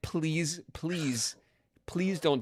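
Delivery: acted out, frantic, panicked, desperate pleading under pressure. Retelling a hard fight about to be lost: imitating own panicked pleading. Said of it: "I started to panic".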